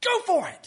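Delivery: high, loud, fired-up cheer. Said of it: "He was fired up".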